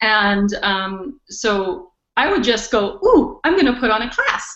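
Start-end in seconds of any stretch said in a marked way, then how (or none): 3.0-4.6 acted playful, curious excitement, swooping eager ooh. Retelling own past thoughts about putting on a class: imitating eager playful wondering. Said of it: "all these oohs".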